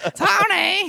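very high, very loud, drawn-out shrill holler. Discussing a mob boss's wife in a show, speaker does a Marge Simpson-like mob wife voice. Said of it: "I'm a mob wife who sounds like".

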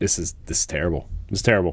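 ordinary talk

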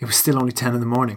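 ordinary delivery

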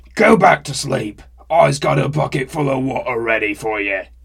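very loud, booming troll bellow. Narrating a story, read the troll's line at the door, shouting. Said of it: "shouted the troll".

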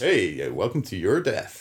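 put-on cheesy DJ voice. Recalling the sentient virus from a Red Dwarf episode, Red Dwarf virus's cheesy DJ voice. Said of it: "it's got this kind of cheesy DJ voice".

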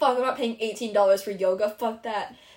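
ordinary talk, nothing marked

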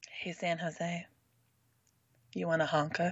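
very soft, low, hushed, seductive murmur. Asked by another speaker to say it in a sexy voice: sexy voice. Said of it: "Say it in your sexy voice".

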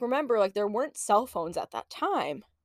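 ordinary talk, nothing marked

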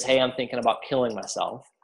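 ordinary talk

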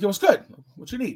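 tough, confrontational, kind of aggressive street tone. Retelling greeting a man he stopped, in a mock-aggressive tone. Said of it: "kind of aggressive".

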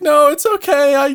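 high, forgiving, reassuring tone. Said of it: "then he was like".

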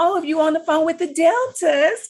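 high, loud mock phone voice, mocking.

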